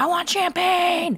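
shrill scream, pitched very high. Retelling being put in a jail cell: imitating her own screaming. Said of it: "and I'm screaming".

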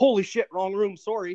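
put-on high, loud, startled childlike blurt.

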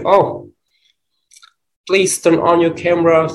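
mild, high-pitched, pleading scolding tone.

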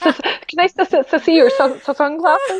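stammering, choking over words. Retelling asking a cool boy about his sunglasses, retelling nervous stuttering. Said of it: "I like stuttered and choked over my words".

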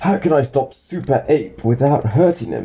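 usual speaking voice

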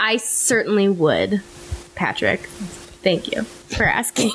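robotic, machine-like voice. Asked by Patrick whether she recommends the album, answering in a robot-like voice. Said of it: "I just said that very robotic-like".

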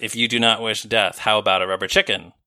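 ordinary talk

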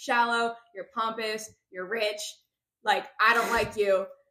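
normal talking voice

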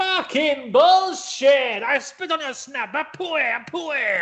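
very high, slow, deliberate, drawn-out tirade. Retelling a story, the Iron Sheik losing a game: Iron Sheik voice. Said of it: "Like that".

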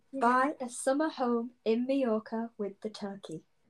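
ordinary delivery

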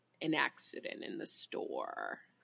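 hushed, whispered, barely audible mumbling. Reading a ghost story aloud, the dead boy answers: mumbling. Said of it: "He mumbles".

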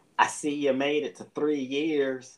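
put-on high, loud West Virginia accent. Retelling a phone call from a former mother-in-law, imitating her West Virginia accent. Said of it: "in her best West Virginia accent".

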